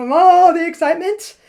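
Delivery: bubbling, high, loud excited rush.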